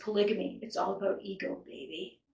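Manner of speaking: very soft, creepy, barely-there murmur. Recounting what a man said to the female host in a tell-all interview: creepy voice. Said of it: "in a very creepy voice".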